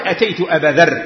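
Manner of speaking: usual speaking voice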